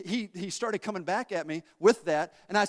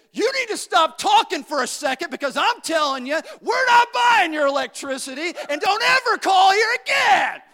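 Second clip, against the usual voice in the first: very loud, very high angry shouting; 11 semitones higher, 9 dB louder than usual. Retelling what he told a caller selling electricity: retelling a yell. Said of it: "I yelled at him".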